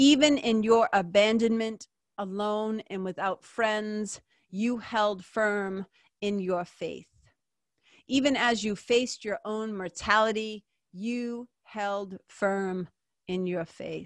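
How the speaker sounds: slow, measured, deliberate, unhurried reading aloud. Sharing a prayer to Saint Joan of Arc with listeners, reading slowly. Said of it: "I'll read it slow".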